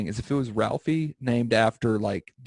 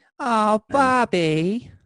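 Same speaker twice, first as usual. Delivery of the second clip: very high-pitched cartoon character voice, called out; 10 semitones higher, 4 dB louder than usual. Answering a mention of Bob's Burgers with a Linda voice. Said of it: "You said Teddy and I went Linda".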